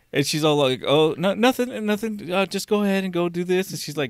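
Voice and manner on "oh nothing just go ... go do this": mock-sweet voice, much higher, slower. Retelling a woman who had been screaming, then answered: mimicking her sweet voice. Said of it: "got her sweet voice back".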